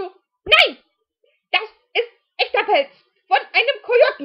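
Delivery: indignant, insistent shout, very loud and high-pitched.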